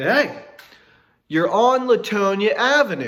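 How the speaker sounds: play-acted stretched, scream-like cry. Retelling calling out to a driver on the street: imitating a scream. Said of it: "really scream at the top of my lungs".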